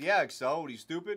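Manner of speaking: normal talking voice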